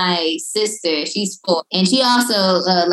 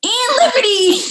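cute character voice, pitched way up; 3 dB louder than usual. Giving the interviewers the pup's tagline in her voice: Liberty's voice. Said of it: "Can you give us Liberty's tagline in her voice?".

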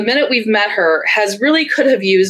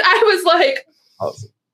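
ordinary talk, nothing marked

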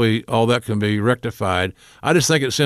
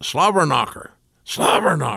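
put-on coach voice, yelling it out; 4 semitones higher than usual. Retelling a coach standing up in a hotel bar: imitating Jim Harbaugh yelling. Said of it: "Harbaugh stands up and yells".

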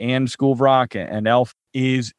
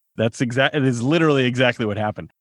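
plain

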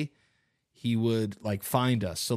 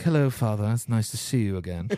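put-on old English gentleman accent. Retelling how he talks, the speaker does an old Englishman voice. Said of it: "like an old Englishman".

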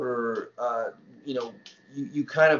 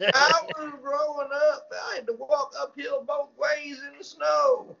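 put-on caricatured elderly voice, higher; 13 semitones higher than usual. Retelling a past improv portrayal of an older person: broad old-person voice. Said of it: "the only time I'd ever portrayed an older person".

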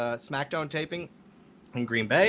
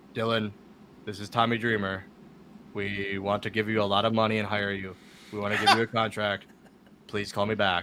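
imitated deadpan monotone, pitched much lower; 7 semitones lower than usual. A speaker retells a voicemail left for him: imitating Tommy Dreamer's monotone voicemail. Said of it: "no one talks in such a monotone voice for a whole voicemail".

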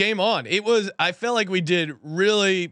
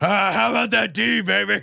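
put-on hoarse voice, much slower. Quoting him thanking everyone after his third Super Bowl win, do a hoarse Andy Reid voice. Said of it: "his voice is so hoarse".

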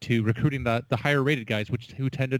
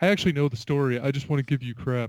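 teasing, ribbing college bro voice. Retelling what rival ASU bros say when they pick a fight, in an ASU bro voice. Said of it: "your ASU bro voice".

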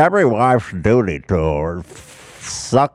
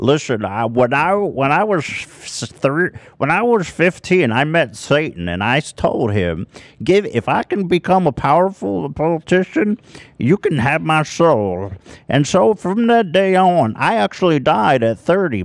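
pitched higher with lively energy; 6 semitones higher than usual. Continuing the Mitch McConnell bit for the others. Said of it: "you're a little too alive".

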